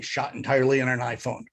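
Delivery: normal talking voice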